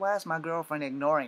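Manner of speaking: ordinary talk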